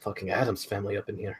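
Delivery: soft, half-whispered side remark. Playing a character leaning toward a companion at a door: half-whispering. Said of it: "and just whisper".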